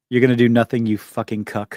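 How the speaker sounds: letting out aggression. Threatening online commenters over their thumbnails: aggressive rant. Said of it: "you got some aggression you need to get out".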